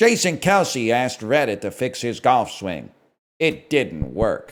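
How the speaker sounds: slow, AI-like synthetic voice delivery. Reading a headline aloud, talking like Alan the AI voice. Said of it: "you're talking like Alan".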